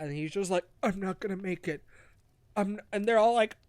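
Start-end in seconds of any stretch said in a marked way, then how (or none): 0.8-2.8 mock dying voice, cut off mid-word. Retelling a story where Abbot Mortimer is found dying: imitating Abbot Mortimer dying. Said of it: "Abbott Mortimer's dying body".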